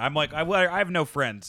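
plain

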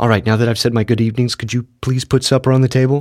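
ordinary delivery

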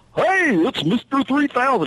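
very high cartoon voice, pitched way up. Retelling how a park worker greeted him: Goofy voice. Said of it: "He was talking like Goofy".

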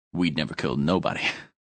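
whisper under breath. Retelling what a man used to tell them, whispered under his breath. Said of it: "he'd whisper under his whisper under his breath".

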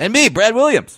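squeaky, super high-pitched voice. Introducing himself on a podcast, the speaker uses a very high-pitched voice. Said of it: "you went super high with your voice right there".

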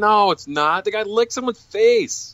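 high-pitched, exasperated, fired-back delivery. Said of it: "I'm like".

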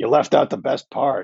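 put-on gravelly New England accent. Reading out a text from Garth Snow: Garth Snow's gravelly New England accent. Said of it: "in Garth's ridiculous, gravelly New England accent".

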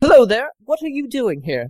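very high-pitched, fake, bad British accent. Speaker voices a much shorter character greeting the group, bad British accent. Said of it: "Because he's totally British".

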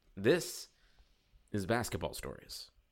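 clean, serious public radio announcer delivery. Asked by a co-host to do that NPR voice thing: NPR voice. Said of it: "do that NPR voice thing".

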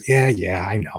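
put-on wry, tongue-in-cheek delivery. Recounting a movie scene where Rogers fights himself, retelling a tongue-in-cheek reply. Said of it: "just kind of like tongue in cheek".

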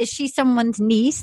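ordinary talk

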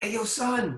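eager, bursting excitement. Retelling a manager's call about a Grammy nomination: imitating an excited manager. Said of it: "my manager called me with excitement".

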